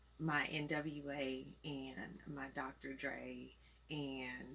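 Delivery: voice changes, dropping down soft and slow.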